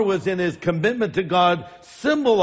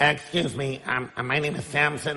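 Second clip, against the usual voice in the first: low, soft, geeky voice; 4 semitones lower, 6 dB quieter than usual. Imagining the biblical Samson as a scrawny little dude, in a geek voice. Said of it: "that was my voice of a geek".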